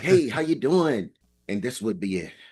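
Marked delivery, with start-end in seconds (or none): 0.0-1.1 perky, bouncy, bubbly, pitched-up tone. Recalling calling a friend on a good day, retelling own bubbly greeting. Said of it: "all bubbly".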